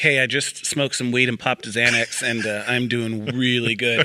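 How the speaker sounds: ordinary delivery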